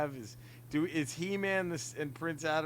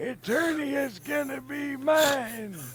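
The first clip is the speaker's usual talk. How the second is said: put-on old man voice, pitched much higher; 11 semitones higher, 6 dB louder than usual. Pitching Emilio Estevez as Skeletor, doing the old man voice. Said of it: "doing the old man voice".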